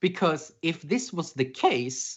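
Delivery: voice breaking, cracking up high mid-phrase. Arguing why the grace period sucks, voice cracking. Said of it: "oh, that voice crack".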